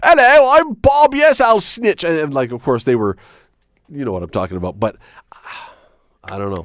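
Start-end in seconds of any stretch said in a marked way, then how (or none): 0.0-2.0 put-on English accent, pitched high. Retelling how callers tried to hide their voices when phoning in, in a fake English accent. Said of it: "They suddenly talked with an English accent".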